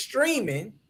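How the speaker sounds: 'streaming' said with strong stress. Speaking to a listener, with stress on 'streaming'. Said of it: "I emphasize on the word stream".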